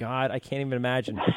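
ordinary delivery

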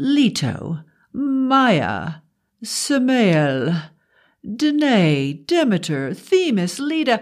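slow, haughty, patronizing, a name drawn out. A sister speaks about her brother in front of the narrator, patronizing. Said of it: "[name] continued to appraise me. ... [name] had the patronizing act down to a science".

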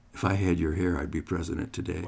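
mock whisper. Retelling words whispered in the ear during a hug: retelling a whisper. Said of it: "he whispered".

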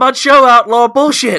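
shrill, blaring outburst, bellowed high and hard. Talking about All Elite Wrestling, the speaker says it in a Jim Cornette voice. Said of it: "Should I say it in a Cornette voice?".

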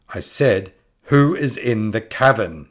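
strained, forced firm bravado, very loud and high. Narrator voicing a woman, despite dread, repeating her question into the cavern: forcing a stronger tone. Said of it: "she tried to strengthen her tone".

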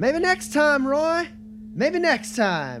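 very high, sing-song, swooping, distant call. Game narrator voices a character calling to Roy from a distance: Charlie Walden shouting out. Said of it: "you hear Charlie Walden's voice shout out".

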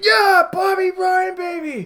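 shrill, very high, loud cheering fan scream. Recalling cheering a goal while sitting among Montreal fans, retelling a scream. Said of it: "and I was screaming".

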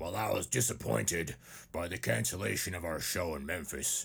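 put-on tough-guy voice, low. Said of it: "he looks like the kind of guy that talks like this".

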